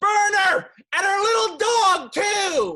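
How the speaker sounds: very loud, very high, shrill, full-lung screaming. Recalling a take on set after long pauses, retelling a scream. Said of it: "I screamed at the top of my lungs".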